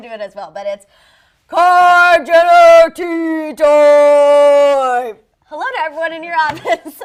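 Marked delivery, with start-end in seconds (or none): 1.5-7.0 very loud, very slow, booming fake man voice. Doing the tea-time intro the way Courtney does, in a fake man voice. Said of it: "your fake man voice came out".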